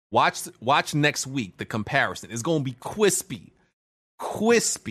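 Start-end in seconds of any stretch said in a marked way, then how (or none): 2.3-4.9 slow, drawn-out, stressing every word. Promising the stream will look crispy next week: talking like Tony. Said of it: "talking like Tony".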